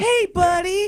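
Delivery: put-on very high, cooing baby-talk voice. Teasing Corey about talking to spiders, imitating Corey's baby talk. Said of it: "baby talk spiders".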